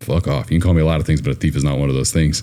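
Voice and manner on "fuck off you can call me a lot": ordinary delivery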